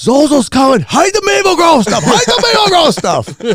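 all-out scream, very high, loud, shrill and swooping. Retelling what was heard through a door: imitating someone screaming. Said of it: "I heard C P screaming".

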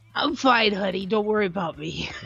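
voice dropped low and spoken slowly. Answering another speaker who hopes her voice is all right: Dolores voice. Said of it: "That was Dolores talking".

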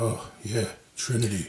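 soft, low, deadpan delivery. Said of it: "how he played that so deadpan".

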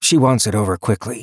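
plain reading voice

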